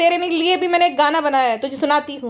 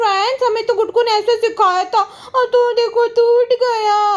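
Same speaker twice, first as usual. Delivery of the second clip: put-on annoying grown-up baby talk, pitched up; 6 semitones higher than usual. Mocking how a thirty-five-year-old woman talks to her friends, mocking an irritating baby voice. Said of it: "वो irritating baby voice".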